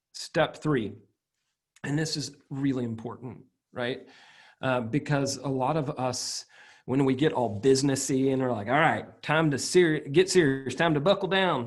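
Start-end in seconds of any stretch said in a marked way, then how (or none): 8.7-11.7 put-on Southern accent. Speaker acts out getting serious about business; put-on southern accent. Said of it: "I'm going to put on my Southern accent".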